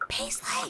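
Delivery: soft, whispered calling tone. Retelling calling the barking dog while a kid sleeps: quiet whisper. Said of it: "I'll literally say it at that tone".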